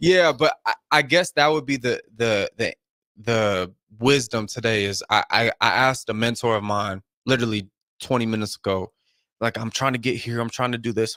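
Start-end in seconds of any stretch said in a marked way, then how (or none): 9.6-11.2 put-on urgent, rushed tone. Retelling what was said to a mentor, imitating own urgent tone. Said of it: "there's urgency in my voice".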